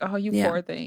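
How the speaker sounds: put-on disgusted woman's voice. Retelling a woman's remark about someone's man: imitating a disgusted woman. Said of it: "She was so disgusted and like".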